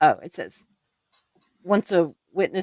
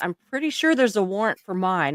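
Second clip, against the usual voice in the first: ordinary talk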